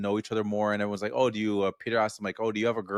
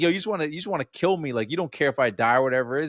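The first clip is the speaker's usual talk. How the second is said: heated, accusing, angry, pitched-up outburst; 5 semitones higher than usual. Describing a scene, the speaker acts out Ray suddenly getting angry: retelling Ray's angry outburst. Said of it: "suddenly he gets all angry and be like".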